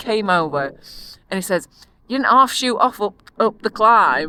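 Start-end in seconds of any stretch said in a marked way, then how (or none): 2.1-4.3 put-on very broad Yorkshire accent. Retelling what a friendly cyclist said after a climb: imitating a Yorkshire accent. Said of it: "just imagine the most Yorkshire man you can possibly think of, accent".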